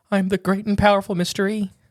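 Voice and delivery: scared, nervous, frightened, high-pitched voice. A podcast host introduces himself as the great and powerful mystery, frightened voice. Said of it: "You sound frightened for being so powerful".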